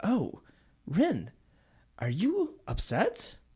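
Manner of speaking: mildly concerned, a bit high. Retelling how Stimpy answered Rin while Rin was choking: imitating Stimpy, subtly concerned. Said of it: "in a subtly concerned voice".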